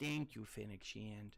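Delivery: put-on, laid-on Minnesota accent, voice dropped. Speaker repeats a thank-you, doing their Minnesota accent impression. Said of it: "my impression of someone from Minnesota".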